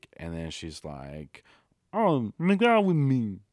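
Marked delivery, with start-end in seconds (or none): 1.9-3.3 very high, loud frog puppet voice. Retelling a woman asking to make out, Kermit the Frog voice. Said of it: "And she sounded like that".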